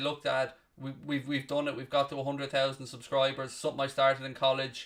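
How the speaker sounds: ordinary talk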